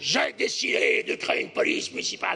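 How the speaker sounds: low, mock-solemn impersonation voice.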